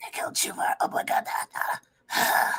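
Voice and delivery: whispered, in a character voice. Voicing a character who considers the hole, then whispers: whispering in character.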